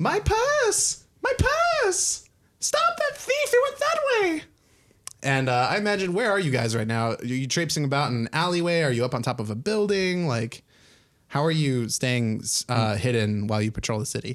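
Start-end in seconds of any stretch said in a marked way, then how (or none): 0.0-4.4 very high, shrill screaming cries. Describing the patrol scene to the group, voicing a robbed woman: woman screaming. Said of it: "the screams of a woman screaming".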